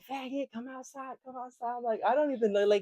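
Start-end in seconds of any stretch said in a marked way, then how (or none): 0.1-1.8 high, play-acted, jeering, taunting scream. Retelling what people throwing eggs at the house yelled: imitating someone screaming. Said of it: "they screaming like".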